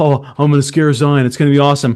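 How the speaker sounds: carefree, easygoing, self-assured voice. Speaker retells a friend hiding to scare someone, imitating Cam's voice. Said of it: "Cam's voice went from".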